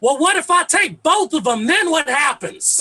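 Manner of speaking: high, loud yell. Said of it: "my father yells out".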